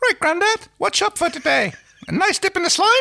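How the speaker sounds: very high, tiny, squeaky fun voice. Reading a story aloud, voicing a character: Mickey Mouse or Tinkerbell voice. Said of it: "I can't tell if you're Mickey Mouse or Tinkerbell".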